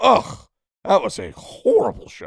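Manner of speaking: loud, high, slow, disgusted commentator voice.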